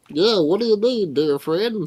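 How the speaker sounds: high-pitched golem character voice. Addressed as Reuben, the golem answers a player, in the Reuben golem voice. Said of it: "I was not expecting that voice".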